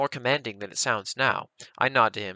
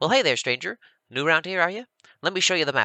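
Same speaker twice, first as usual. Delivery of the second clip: cheery, chipper, nasal voice, pitched up; 6 semitones higher, 4 dB louder than usual. Narrator reads a short pointed-eared man greeting a stranger: chipper, nasally voice. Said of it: "a chipper, nasally voice".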